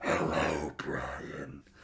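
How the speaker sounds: very quiet, barely audible demonic voice. Describing a worm creature and imagining what its voice should be: demonic voice. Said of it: "this thing has got to have like a demonic voice".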